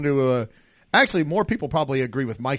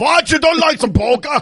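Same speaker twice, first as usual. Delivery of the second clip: dubious put-on German accent, very high and loud; 12 semitones higher, 7 dB louder than usual. Joking to German listeners about polka: attempted German accent. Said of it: "I don't know if that was a German accent".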